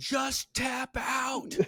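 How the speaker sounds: very high, shrieked, loud screaming. Retelling a wrestling match moment, imitating Angle screaming. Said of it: "Angle had him by the face and was screaming".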